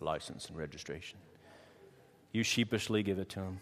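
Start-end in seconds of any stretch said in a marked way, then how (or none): 0.0-1.2 very low, hushed, quiet cop voice. Retelling a traffic stop, the speaker imitates the policeman's lowered voice. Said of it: "They always lower their voice when they say that".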